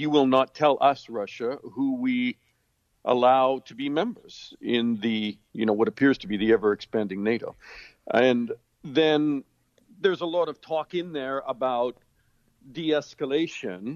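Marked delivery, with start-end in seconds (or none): none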